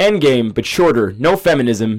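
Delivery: put-on American accent. Quoting a man's summary of Endgame: American accent. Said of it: "I'm going to do it in an American accent".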